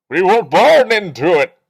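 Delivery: cup-muffled, shrill, booming, very loud, slow villain growl. Speaker compares his class to Bane and tries the line: muffled Bane voice. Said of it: "We need a better cup".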